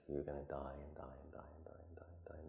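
soft, unvoiced whisper under the breath.

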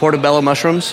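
ordinary talk, nothing marked

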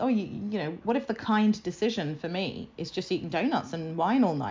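ordinary talk

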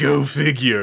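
cartoonish, unserious cartoon villain voice. Retelling a movie villain's line the way he said it: imitating Quaylen, like Stewie Griffin. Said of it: "the way he says "go figure" is like".

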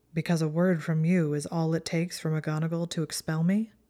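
ordinary delivery

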